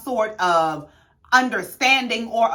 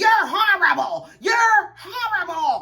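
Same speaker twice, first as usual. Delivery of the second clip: high, mock screaming outburst; 9 semitones higher than usual. Retelling an argument where Robin screams at Wendy: imitating Robin screaming. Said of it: "and Robin is screaming".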